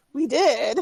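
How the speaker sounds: whiny voice. Retelling what a man said after being kicked in the chest, mock slightly whiny voice. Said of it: "in a little, slightly more whiny voice".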